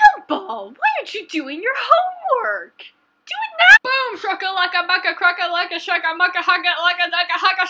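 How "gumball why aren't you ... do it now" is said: put-on cartoon cat voice, higher and louder. Showing a drawing while doing a Gumball impression. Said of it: "this is my Gumball impression".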